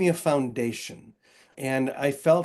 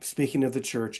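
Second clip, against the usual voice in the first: ordinary delivery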